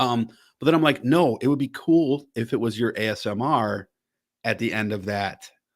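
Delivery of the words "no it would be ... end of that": normal talking voice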